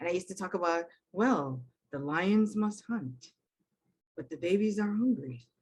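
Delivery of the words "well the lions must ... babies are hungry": nature documentary narrator voice. Retelling how documentaries were practiced at home: David Attenborough voice. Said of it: "practice his intonation, the way he talks".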